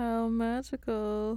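sincere but sarcastic-sounding high voice. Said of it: "I sound sarcastic".

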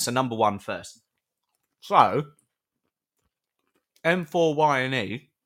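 talking with mouth full. A host reads out a listener's name on air: talking with mouth full. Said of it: "Sorry, I've got my mouth full".

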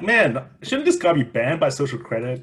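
ordinary talk

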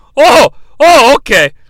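put-on very loud, high, kooky, crazy old grandpa voice. Acting out the uncle talking to Zuko, in a crazy grandpa voice. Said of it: "the voice that I used for the crazy grandpa".

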